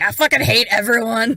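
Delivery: put-on old man voice, muttering. Picturing a film character with a cane: muttering like the old man from Up. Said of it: "muttering around, like".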